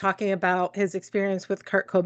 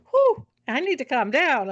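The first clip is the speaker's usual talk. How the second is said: worked-up, excited hollering with swooping pitch; 6 semitones higher than usual. Describing a personal development speaker he loves, quoting him; imitating excited yelling. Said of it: "he gets real excited and he's yelling".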